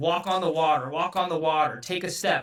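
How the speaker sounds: ordinary talk, nothing marked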